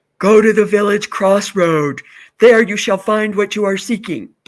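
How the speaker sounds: loud, booming voice as if from a well. Telling a story about a man asking a well, voicing the well: imitating a talking well. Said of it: "That was just my imitation of a well".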